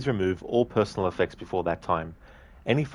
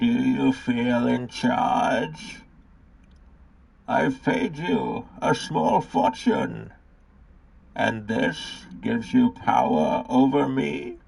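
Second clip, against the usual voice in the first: put-on rasping, rough, creaky, pitched-up character voice; 5 semitones higher than usual. Quoting a villain's lines from The Dark Knight Rises: Bane impression. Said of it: "that Bane impression from The Dark Knight Rises".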